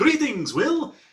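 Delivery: very high, theatrical vampire count voice. Retelling a first greeting on a vampire episode: vampire count voice. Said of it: "he has a count impression".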